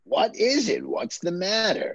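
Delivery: put-on grandfather storyteller voice. Reading the grandfather's lines aloud from a script: Peter Falk impression. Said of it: "my Peter Falk".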